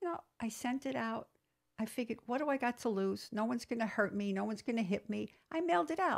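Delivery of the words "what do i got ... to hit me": ordinary talk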